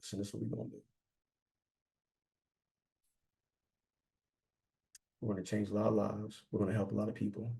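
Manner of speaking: very hushed, gentle, low and soft voice. Showing how to talk to yellows instead of yelling, low, soft voice. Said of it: "my voice went low because yellows".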